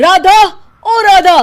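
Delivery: furious, shrill yell, very high and very loud. A man back from the office calls out for the woman who packs his lunch, angrily shouting. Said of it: "चिल्ला क्यों रहे हो?".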